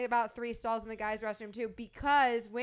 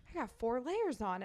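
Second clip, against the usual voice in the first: hushed, under-the-breath stage whisper; 4 dB quieter than usual. Retelling what a woman in line said: imitating a half-whisper. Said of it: "whispers under her voice".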